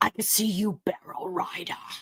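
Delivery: dragon creature voice. Joking about spotting someone in barrel jeans: Smaug impression. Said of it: "do my best Smaug impression".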